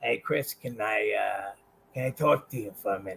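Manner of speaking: very low, soft, quiet put-on voice. Telling a story of being pulled aside one day at WCW: Kevin Sullivan impression. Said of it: "I'll do the impression first".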